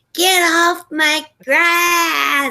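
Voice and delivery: acted-out icky yell, high, loud, very slow, stretched. Retelling how an old lady yelled at kids outside, imitating an icky yelling voice. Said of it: "like that icky voice".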